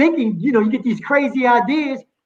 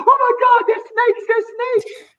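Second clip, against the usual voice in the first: mock shrill screeching at a very high pitch; 12 semitones higher than usual. Retelling how a brother ran out after seeing seaweed, retelling a scream. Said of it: "He ran out screaming".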